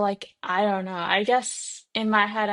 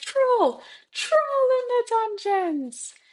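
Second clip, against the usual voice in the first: put-on gasping alarmed voice, higher pitch; 14 semitones higher than usual. Acting out the movie scene where Quirrell bursts in: Quirrell from the movie, gasping. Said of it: "I'm trying to remember how he says it in the movie".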